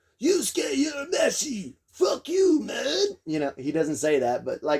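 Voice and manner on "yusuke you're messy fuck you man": very high, ridiculous character voice, cranked way up. Imitating a favorite character from a show, Kuwabara voice. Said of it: "and his voice too. ... that's how he talks".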